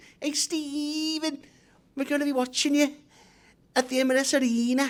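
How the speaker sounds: poor fake Scouse accent, very high. Retelling what a man used to tell him, in a bad scouse accent. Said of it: "That's not a very good Scouse accent".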